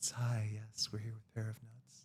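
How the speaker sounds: quiet public radio host voice. Greeting listeners of the show, NPR voice. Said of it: "we should try like the N P R voice".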